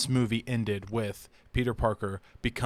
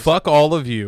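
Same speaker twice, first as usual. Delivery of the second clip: very loud, hostile, aggressive outburst; 5 semitones higher, 12 dB louder than usual. Ranting at listeners who only now like an actor: aggressive. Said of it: "That was aggressive".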